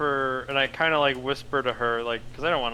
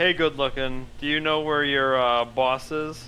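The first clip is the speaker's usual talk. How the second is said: usual speaking voice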